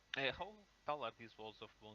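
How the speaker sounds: ordinary talk, nothing marked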